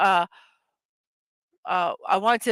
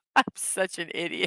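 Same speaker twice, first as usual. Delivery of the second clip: soft, giggly, self-amused laughing. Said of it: "It takes so little to make me laugh".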